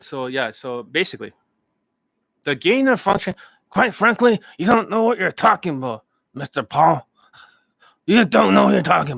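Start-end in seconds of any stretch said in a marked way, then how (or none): 2.4-9.2 put-on older man's voice, higher. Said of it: "I'm Anthony Fauci".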